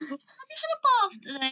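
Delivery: very high-pitched London accent. Asked whether accents in England differ, demonstrating a London accent. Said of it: "do you know what a London accent is".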